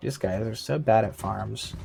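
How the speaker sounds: ordinary talk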